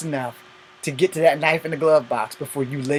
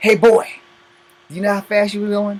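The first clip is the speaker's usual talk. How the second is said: rude, disrespectful cop voice with raised pitch; 6 semitones higher, 4 dB louder than usual. Retelling how a police officer talks at a traffic stop: imitating a rude police officer. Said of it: "Or my favorite".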